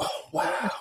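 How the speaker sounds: put-on hushed, breathy, awestruck, childlike wonder. Showing how awake people meet the world: childlike wonder. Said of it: "like a child".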